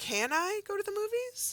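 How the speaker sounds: pitch climbs in a question-like tune on movies. Explaining how spoken questions are marked without a question mark: voice rising at the end. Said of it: "My voice goes up to show that a question is being asked".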